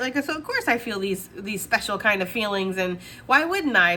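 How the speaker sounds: normal talking voice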